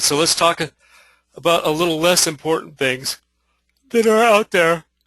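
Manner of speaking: mid-yawn speech, broken up and halting. Moving on to the less important points in the talk, yawning while talking. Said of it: "Excuse me for yawning".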